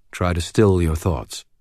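ordinary delivery, nothing marked

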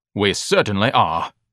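plain reading voice

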